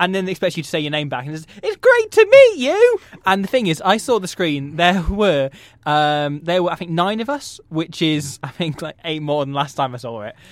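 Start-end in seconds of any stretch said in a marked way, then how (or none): 1.6-3.0 very high, loud, gushing, overenthusiastic presenter voice. Retelling what the presenter says after hearing a name: imitating an overenthusiastic presenter.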